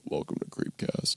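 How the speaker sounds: quiet seductive put-on voice. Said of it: "can you do a [name] impression?".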